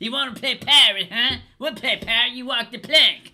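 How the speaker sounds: shrill, booming, very loud, very high woman's voice. Trying to do her voice in conversation, impression of a woman's voice. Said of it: "when I was trying to do her voice".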